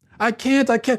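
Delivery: put-on very high, flustered little boy voice. Retelling how a boy stuck behind a locked door answered, imitating a flustered child. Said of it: "he was getting flustered".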